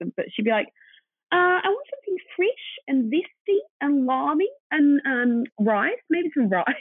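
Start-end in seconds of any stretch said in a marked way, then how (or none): 1.3-6.6 really bad New Zealand accent, very high-pitched. Retell how the business's co-founder would ask you for a dish, as [name] in a really bad Kiwi accent. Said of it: "I'm going to do a really bad Kiwi accent".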